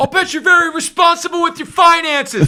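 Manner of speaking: play-acted, very high, furious, angry screaming. Describing someone's reverse-heckling trademark, retelling an angry scream. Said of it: "he screams it with an angry voice".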